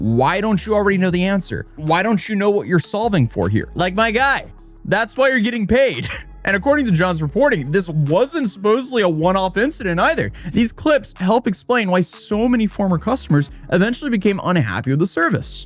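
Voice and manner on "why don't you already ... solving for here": acted, angry, snapping, scolding scream. Imagining a math tutor five minutes into a session, act out someone screaming at the student. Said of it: "they start screaming".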